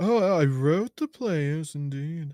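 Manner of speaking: teasing, mocking, piss-taking parody voice. Imitating the other speaker's claim to mock him: mocking imitation of another speaker. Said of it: "if you're gonna take the piss".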